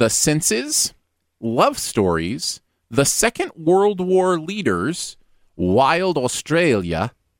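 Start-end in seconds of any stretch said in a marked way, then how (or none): 5.5-7.1 put-on Australian accent. Reading out a list of quiz topics: put-on Australian accent. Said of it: "was that accent close?".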